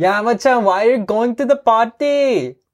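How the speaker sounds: very high-pitched Indian-sounding accent. Trying to imitate how some people talk, in an accent that comes out Indian-sounding. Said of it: "that sounds like an Indian".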